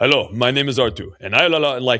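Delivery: put-on dead-level monotone with a Finnish accent. Retelling how a new coach started his class, imitating Arttu's monotone Finnish accent. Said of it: "he's a monotone Finnish dude".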